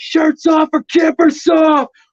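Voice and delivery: very high, stretched-out yell. Retelling yelling downtown during hockey playoffs: imitating own past yell. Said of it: "I just yell".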